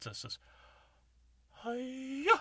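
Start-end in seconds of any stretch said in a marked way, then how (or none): 1.5-2.4 "hi-ya" stretched out, high and loud. Doing only one part of a Miss Piggy impression: Miss Piggy voice. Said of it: "I do a Miss Piggy impression".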